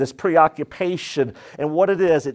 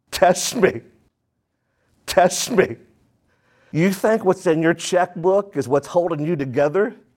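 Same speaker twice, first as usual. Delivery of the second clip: mock taunting tone; 2 semitones higher than usual. Preaching to the church, voicing what God says in the Hebrew: acting out a taunt. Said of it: "is taunting us".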